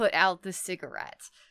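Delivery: ordinary talk, nothing marked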